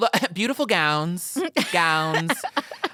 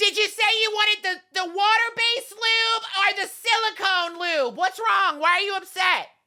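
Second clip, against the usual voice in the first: play-acted overly loud talking; 13 semitones higher than usual. Playing someone who can't hear herself in a Walgreens, mock talking too loud. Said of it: "I'm talking loud?".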